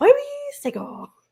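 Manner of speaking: put-on dog voice. Showing others the voice used for a dog, in a dog voice. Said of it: "making the E R into like a oh".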